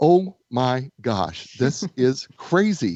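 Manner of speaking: put-on amused, slow, words broken by giggles. Retelling forgetting why she walked into the closet, acting out laughing at herself. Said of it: "literally laughing at myself going".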